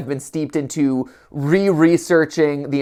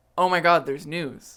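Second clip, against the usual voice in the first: quieter delivery; 7 dB quieter than usual. Recreating, on request, the moment of hearing news: recreating own past reaction. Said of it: "can you recreate that moment for me?".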